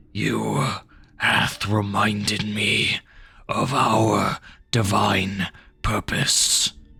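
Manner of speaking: harsh-sounding, hard-edged creature voice. A creature kneels and speaks to Anastas, in a harsh voice. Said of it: "saying in a harsh voice".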